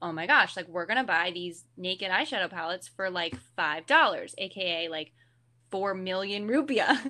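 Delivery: ordinary talk, nothing marked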